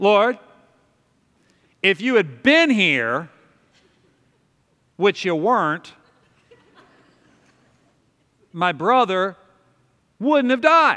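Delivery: put-on resentful, reproachful, loud, swooping accusing tone. Acting out a prayer said to Jesus with tone: mock-resentful, accusing tone. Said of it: "I wonder if she said it with tone".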